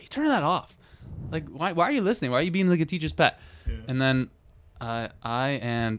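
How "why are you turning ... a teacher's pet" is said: play-acted irritated, pissed-off outburst, pitched up. Retelling scolding a classmate who turned it off, acting out being pissed off. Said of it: "and I'm getting all pissed".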